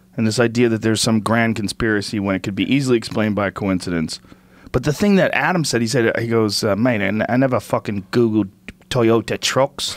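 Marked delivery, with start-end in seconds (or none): 6.6-9.9 put-on slightly British accent, slower. Retelling what Adam said: imitating Adam, a little British. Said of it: "A little British".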